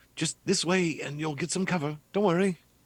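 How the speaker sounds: put-on very high English accent. Voicing a character guiding others to cover: English accent. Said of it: "Why is Nedry talking in English accent now?".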